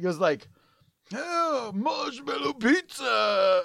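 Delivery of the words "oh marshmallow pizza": high-pitched, cartoon-style exclamation, blurted out. Speaker retrying how the cartoon turtle talks, Michelangelo cartoon voice. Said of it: "take two on the Michelangelo".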